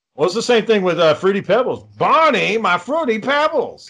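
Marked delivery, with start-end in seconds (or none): 2.0-3.9 poorly done high, drawn-out put-on cartoon voice. Mimicking the Fruity Pebbles character for the others, an inaccurate cartoon impression. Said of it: "he didn't sound like that".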